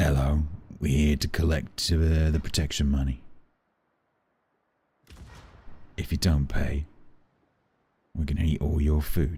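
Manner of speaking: put-on London-accented badger voice. Streamer imagining badgers coming into the house, voicing them with a london accent. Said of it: "badgers would have a London accent".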